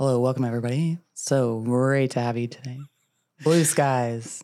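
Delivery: put-on airline pilot voice over an intercom. Imitating an airline pilot speaking over the intercom: airline pilot intercom voice. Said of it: "People are gonna write in about that voice".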